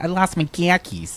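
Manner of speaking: slow, high Boston accent, car keys as khakis. Recalling a joke about losing khakis: Boston accent. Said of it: "the Boston".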